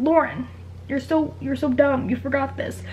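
usual speaking voice

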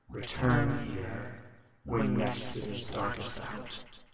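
strange, inhuman, otherworldly voice, distant and echoing. A voice from out of a well addresses those summoned: strange, not-human voice. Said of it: "But out of the well, seemingly from a great distance, echoes a voice. It's a strange voice, certainly not a human voice. It sounds, well, sounds is the wrong word. You don't really hear it with your ears, but you ... It's a strange voice, certainly not a human voice. It sounds, well, sounds is the w".

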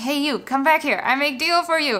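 high, insistent street hawker's call. Retelling a seller calling after the speaker walking away, retelling a seller yelling. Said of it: "and then he keeps yelling".

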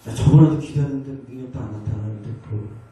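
quiet, nagging mutter.

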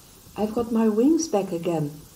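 joyful, high-pitched cry at full volume, very loud. Reading a fairy tale aloud, a character calls out while gliding past, crying out happily. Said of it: "cried Godmother happily".

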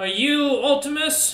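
very high, loud storm giant voice. Voicing a storm giant greeting the party: voicing a storm giant. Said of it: "they look over at you and go".

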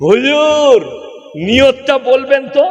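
shouting, loud shouted call. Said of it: "কারা আগে চিল্লিয়ে বলে".

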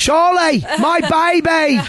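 put-on terrible high, slow Australian accent.

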